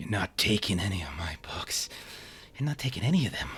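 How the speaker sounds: muttered, mumbled rambling under the breath. Voicing a figure moving around a player in the dark: mumbling to herself. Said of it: "kind of mumbling something".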